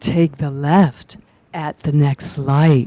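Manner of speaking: low, slow, sexy, seductive navigation-lady voice. Telling how you joke around imitating the navigation voice, mimicking sexy GPS lady voice. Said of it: "mimicking her, and it's like".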